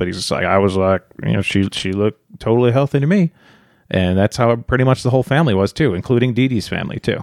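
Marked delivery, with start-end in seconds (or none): 0.4-3.3 put-on easygoing, laid-back Cajun accent. Quoting Rod from a documentary, imitating Rod's Cajun accent. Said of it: "that Cajun".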